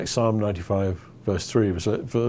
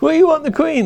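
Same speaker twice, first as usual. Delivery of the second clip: put-on, very high shouted calling out; 6 dB louder than usual. Recounting standing right in front of the Queen with a flag; retelling shouting. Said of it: "and I'm shouting".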